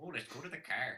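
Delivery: put-on Canadian accent. Asked for a stereotypical Canadian accent, giving it a try: stereotypical Canadian accent. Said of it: "give us your best stereotypical Canadian accent?".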